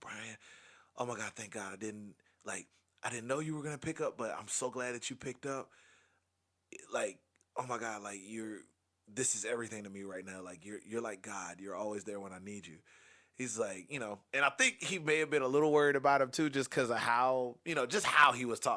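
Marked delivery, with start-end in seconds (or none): 0.0-12.8 voice flooded with gushing relief. Quoting a caller on the phone right after a plane landed, retelling someone's relief. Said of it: "hearing the relief in his voice".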